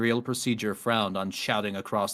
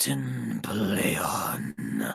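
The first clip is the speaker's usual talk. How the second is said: low, deep, rough, gravelly, catlike mewing voice. The narrator voices a creature speaking into the captain's ear from behind, deep gravelly cat-like voice. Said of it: "A deep, gravelly, cat-like voice mewed".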